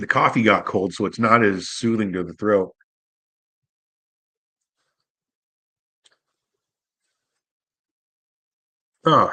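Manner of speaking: choking while talking. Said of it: "I'm choking over here".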